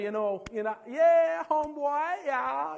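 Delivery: put-on Jamaican accent with "yeah" drawn out. Recalling time spent around them, speaker shows how they talked like a Rasta. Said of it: "we'd talk like a Rasta".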